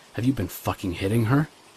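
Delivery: ordinary talk, nothing marked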